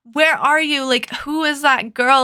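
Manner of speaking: acted-out panicked, frantic, freaked-out demanding tone. Retelling how a woman freaked out while calling him, imitating someone freaking out. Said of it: "And she's freaking out".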